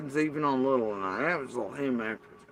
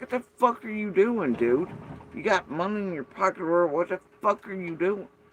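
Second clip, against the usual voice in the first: mock harsh scolding tone, higher pitch; 5 semitones higher than usual. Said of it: "I chew his ass".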